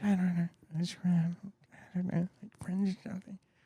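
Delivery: quiet, hazy, mumbled voice. Do your impression of him being asked about his favorite season, imitating a mumbler. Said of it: "this is my impression of him".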